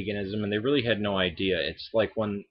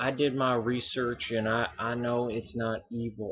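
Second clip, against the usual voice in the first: put-on sweet southern accent, slower; 3 semitones higher than usual. Responding to Night Guardian Angel's video, quoting his claim, imitating Night Guardian Angel's southern accent. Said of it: "this sweet southern accent like".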